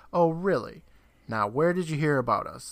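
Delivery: play-acted snide, scoffing, sarcastic tone. Retelling a story scene where Roy answers Chris, retelling Roy's mocking reply. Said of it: "Roy mockingly says".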